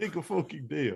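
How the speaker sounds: mixed Russian, Italian and New York accent. Two speakers joking around with a mixed accent: Russian Italian New York accent. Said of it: "We're oddly good at a Russian Italian New York accent".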